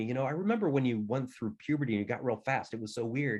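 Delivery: ordinary delivery, nothing marked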